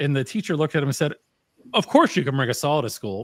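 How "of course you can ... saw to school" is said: sarcastic, swooping sing-song voice. Retelling a teacher's answer to a student's question: imitating a sarcastic reply. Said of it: "being sarcastic".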